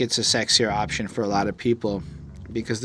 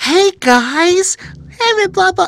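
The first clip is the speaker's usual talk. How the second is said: put-on cheerful voice, much higher pitch, louder; 12 dB louder than usual. Speaker mocks the typical YouTuber greeting, mock-cheerful YouTuber voice. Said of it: "Fuck that voice".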